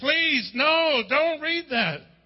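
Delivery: screaming, yelled-out outburst. Retelling how a teacher reacted to a bible at lunchtime: imitating someone screaming. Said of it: "this one teacher started screaming".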